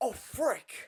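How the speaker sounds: energetic, emphatic, high outburst, far from calm. Showing how a line should have been said: with more effort. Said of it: "you could have said it like".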